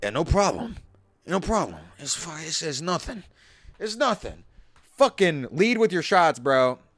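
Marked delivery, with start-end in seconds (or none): 0.0-4.4 hushed, low, mobster-type voice. Acting out Tone's reply to a warning about an incoming plane, in a Tony Soprano voice. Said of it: "Tony Soprano type dude".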